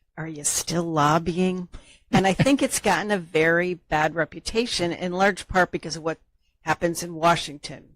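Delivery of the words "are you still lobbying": deeply concerned, very worried tone. Retelling what cousins ask at family reunions, imitating a worried tone. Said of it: "in a very worried tone of voice".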